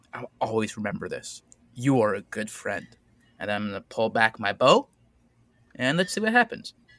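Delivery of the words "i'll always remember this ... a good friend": whispered, much quieter voice. During a game, a character speaks to the younger guard, whispering. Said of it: "I'm going to whisper to the younger guard".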